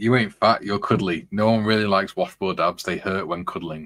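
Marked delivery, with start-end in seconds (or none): none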